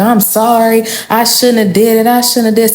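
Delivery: mock groveling, sobbing and tearful. Retelling an ex's crying apology after cheating: imitating someone crying. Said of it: "straight tears dropping".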